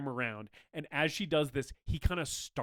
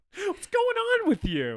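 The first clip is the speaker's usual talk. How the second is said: very high, loud, raised calling out; 8 dB louder than usual. Retelling a movie chase scene, the killer swinging and missing: Terry's chase tone. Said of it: "him being like".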